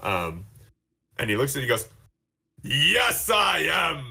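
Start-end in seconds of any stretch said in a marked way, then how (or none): 2.6-4.1 high, forced, fake tough-guy voice. Retelling a gnome's reply to the player, in his fake tough voice. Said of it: "he's using this fake voice".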